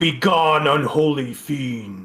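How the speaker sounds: ghostly, otherworldly spirit voice. A game master voices a spirit calling down the sewer corridor, in a booming spirit voice. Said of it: "you hear this booming voice down the corridor that says".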